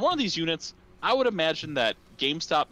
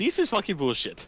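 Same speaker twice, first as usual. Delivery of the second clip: high, pitched-up cartoon Italian voice; 6 semitones higher than usual. [name], just connected to the call, answers in a Mario voice. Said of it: "I like that you went with the Mario voice too".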